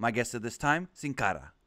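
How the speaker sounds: put-on words rolled in a Latin American accent.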